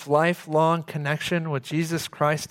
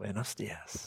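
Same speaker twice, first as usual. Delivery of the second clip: put-on hushed, breathy, sweet little old-man whisper; 7 semitones lower, 16 dB quieter than usual. Speaker recalls an old man on a hotel porch greeting them back, sweet little voice. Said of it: "in his sweet little voice".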